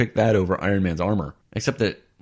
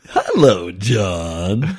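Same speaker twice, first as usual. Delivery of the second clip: drawn-out, creepy put-on voice; 3 dB louder than usual. Greeting the other speaker while trying out voices: creepy put-on voice. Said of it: "That's really creepy".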